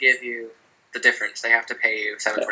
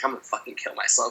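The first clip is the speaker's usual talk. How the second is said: mock muttering, quieter; 8 dB quieter than usual. Retelling what a coworker said at work: imitating someone muttering under breath. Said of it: "under her breath".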